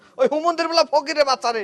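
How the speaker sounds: plain reading voice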